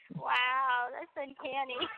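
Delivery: put-on sarcastic tone. Retelling a roommate's reaction to the impression: imitating sarcastic praise. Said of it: "She was being sarcastic".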